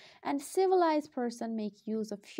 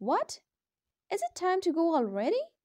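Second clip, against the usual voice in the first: high, swooping, incredulous, surprised, doubtful tone; 6 semitones higher, 4 dB louder than usual. Explaining intonation, demonstrating an example line with surprised doubt. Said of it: "conveys a feeling of surprised doubt".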